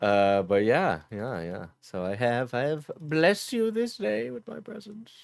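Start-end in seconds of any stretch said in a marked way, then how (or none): 1.8-5.1 feeble, weak fake British accent, very high. Speaker addressing the listeners, in a weak fake British accent. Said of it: "Why is your British accent gets weaker".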